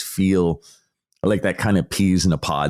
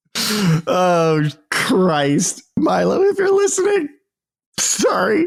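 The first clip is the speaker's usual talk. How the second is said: very high, choked-up, cracking voice; 14 semitones higher than usual. Speaker with a sore throat apologizes to someone whose name he got wrong, cracked-up choked voice. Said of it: "my voice is all cracked up and choked".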